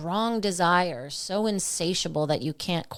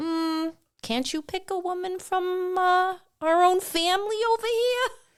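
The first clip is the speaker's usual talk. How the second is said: put-on very high, slow, drawn-out New York Jersey accent; 12 semitones higher than usual. Retelling a Bible story, voicing the parents in a Jersey New York accent. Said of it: "I'm putting in the Jersey, New York accent".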